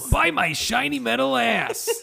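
bad raspy robot voice. Chatting about a voice actor, one speaker tries a bad Bender impression. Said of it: "That was horrible".

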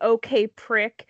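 ordinary delivery

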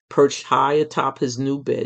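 plain reading voice

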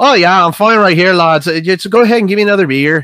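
put-on Irish brogue. Retrying an accent after the first try came out Scottish, now a put-on Irish accent. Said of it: "Let me try this again".

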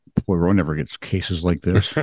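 put-on muttering under breath. Imagining police at the bloody scene: imitating muttering under breath. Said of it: "I could hear them muttering under their breath".

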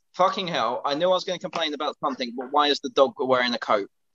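ordinary talk

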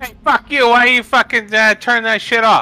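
loud, high, all-out screamed outburst. Voicing a character who starts screaming once allowed to speak: screaming. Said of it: "Menica starts screaming".

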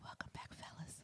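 soft, hushed, breathy whisper, barely voiced. Welcoming back the listeners again, this time whispering. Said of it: "I always gotta whisper at some point".

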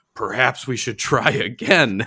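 darkly menacing, veiled threatening tone. Recapping an episode, the speaker retells Anakin threatening an injured foe, mock-menacing. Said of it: "really menacingly goes".

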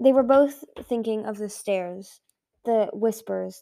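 ordinary delivery

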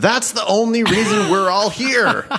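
play-acted, very high-pitched, indignant yell. Recounting what they yelled in a crowded test room: retelling own yell. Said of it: "So I yelled".

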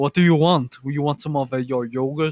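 put-on Transylvanian-accented speech. Imitating a man they describe, in a Transylvanian accent. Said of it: "he has like that Transylvanian accent".

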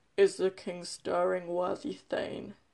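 put-on deep voice. Reading Macbeth aloud, the speaker voices Macduff in a deep voice. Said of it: "I'm going to do a deep voice for Macduff".

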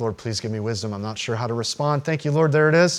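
acted muttering under breath. Acting out a quick prayer said before a king: imitating a prayer under breath. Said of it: "So maybe under his breath".

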